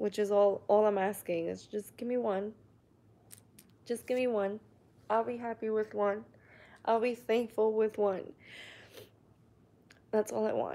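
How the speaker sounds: emotional, voice cracking and breaking. A woman who has tried for almost two years to have a child, getting emotional. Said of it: "I'm sorry I got emotional".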